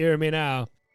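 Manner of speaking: put-on Jamaican accent. Trying out an accent, then remarking on it: jamaican accent. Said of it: "That's more Jamaican".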